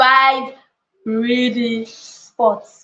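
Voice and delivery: slow, deliberate delivery, each word separate. Speaker telling the room to say a phrase, said slowly. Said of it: "Say it slowly".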